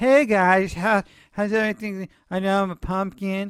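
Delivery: put-on hesitant, unsure, mock-unconfident voice. Speaker shows how doubting himself would sound, acting unconfident. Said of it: "what if I came out here and I was just like".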